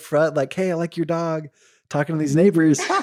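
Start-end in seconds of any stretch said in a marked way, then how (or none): 0.5-1.5 put-on friendly little four-year-old child's voice. Speaker retelling a four-year-old talking to neighbors: little kid voice. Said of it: "heard his little voice".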